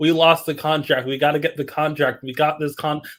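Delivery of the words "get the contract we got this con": ordinary talk, nothing marked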